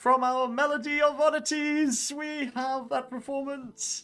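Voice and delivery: very high, slow words spoken through laughter. Alicia announcing the performance to the crowd, in a laughing voice. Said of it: "kind of in a laughing voice".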